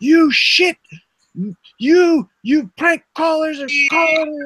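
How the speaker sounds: mock angry yelling. Recounting a phone call made at age three, retelling an angry yell. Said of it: "he starts yelling at me".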